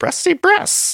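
put-on very high-pitched baby talk. Acting out what Mary said as she poked Heather, in a Yoda baby voice. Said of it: "Like it sounded like a Yoda baby voice".

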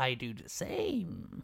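slow, drawn-out creepy man voice.

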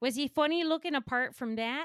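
put-on Minnesota accent. Retelling a film scene for others to guess, doing the Fargo Minnesota accent. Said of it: "The accent was doing a lot of work".

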